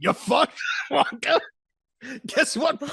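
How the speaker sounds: slow, high-pitched drawl. Acting out Grandpa Joe in front of Wonka: imitating Grandpa Joe. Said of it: "Grandpa Joe in front of him is like".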